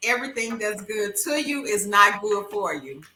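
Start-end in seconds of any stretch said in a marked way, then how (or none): none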